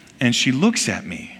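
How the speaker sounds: usual speaking voice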